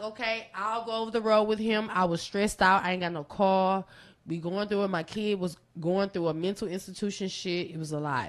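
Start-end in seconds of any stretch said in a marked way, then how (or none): none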